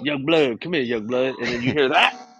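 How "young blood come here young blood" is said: put-on old street uncle voice, calling out. Acting out someone's dad calling out, in an old street uncle voice. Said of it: "His daddy sounds like a typical unk hanging out at the front of the 7-Eleven".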